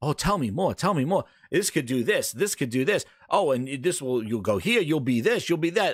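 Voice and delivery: ordinary talk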